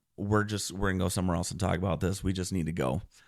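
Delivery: ordinary delivery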